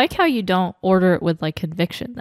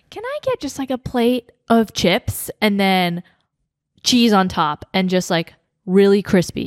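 ordinary delivery

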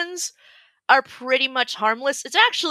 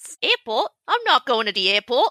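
put-on Australian accent. Joking after apologizing to Australian followers: put-on Australian accent. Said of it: "so sorry to our Australian followers".

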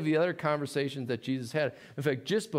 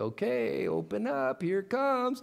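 put-on high-pitched baby-talk voice; 8 semitones higher than usual. Showing a parent stuck in baby talk greeting their spouse who comes home, baby talk voice. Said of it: "you can't get out of that baby talk".

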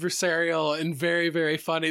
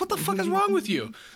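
high, exasperated inner voice. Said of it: "And it's like".

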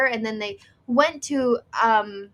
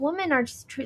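normal talking voice

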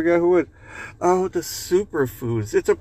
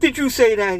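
sharp-edged, pitched-up hiss; 7 semitones higher, 3 dB louder than usual. Narrator voicing the burglar speaking to the parrot, hissed. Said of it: "he hissed at the parrot".

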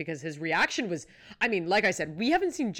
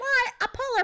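put-on excited speech, higher pitch. Retelling a cast member's reaction to a polar plunge: imitating excited speech. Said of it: "She's very excited".

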